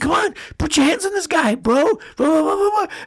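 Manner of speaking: mock very high, loud yell. Retelling what a fighter's corner shouted at him: imitating a fighter's corner yelling. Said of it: "his corner started yelling at him".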